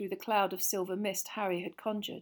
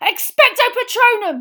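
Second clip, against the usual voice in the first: shrill, high-pitched yell at full volume; 17 dB louder than usual. Harry, with Dementors closing in, casting a spell, yelling. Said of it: "Harry yelled".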